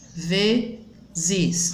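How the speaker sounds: vezes said slowly, syllable by syllable. Teacher showing a two-syllable word, vezes split into syllables. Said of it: "Eu falo pausadamente".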